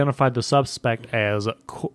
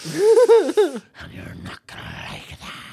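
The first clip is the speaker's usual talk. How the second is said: very high villain voice, pitch swinging widely; 14 semitones higher than usual. Joking about a phone bomb threat: Heath Ledger Joker impression. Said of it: "solid Heath Ledger Joker impression".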